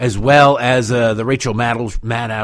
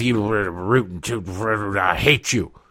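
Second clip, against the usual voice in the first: put-on mumble, quieter, lower and slower; 3 semitones lower, 5 dB quieter than usual. Describing Donald Trump passing the Marines at the helicopter, Trump mumbling under his breath. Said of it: "he's mumbling under his breath".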